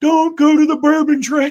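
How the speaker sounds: very high, shrill little protesting yell. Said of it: "Jimmy's liver yelling".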